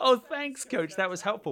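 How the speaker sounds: acted, very high, loud, laughter-filled words. Retelling answering a coach's joke: retelling a reply through laughter. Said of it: "I just burst out laughing".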